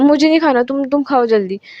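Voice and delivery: acted-out cross, irritated, angry brush-off tone. Retelling a scene where one character refuses food: imitating an angry reply. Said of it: "गुस्से में ऐसे बोलती है".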